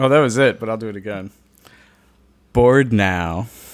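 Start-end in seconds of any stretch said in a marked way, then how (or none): 2.5-3.5 theatrical, dramatic delivery. Asked by a co-host to redo the line, theatrical Willow 'bored now'. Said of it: "Do your best theatrical board now".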